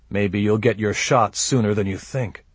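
plain reading voice

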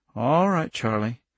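ordinary delivery

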